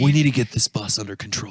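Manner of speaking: bad put-on beach surfer-dude voice. Doing a Keanu Reeves impression again when asked: surfer dude voice. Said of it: "He sounds like a surfer dude when you do it".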